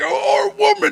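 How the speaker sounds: fake British accent, pitched very high. Imagining how the monks would talk, in a put-on British accent. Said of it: "Why are there British people in a".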